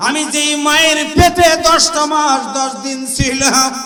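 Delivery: high, loud calling out.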